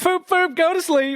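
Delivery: high, loud, carefree careless tone. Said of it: "probably just been like".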